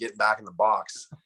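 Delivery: ordinary delivery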